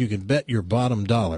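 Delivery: normal talking voice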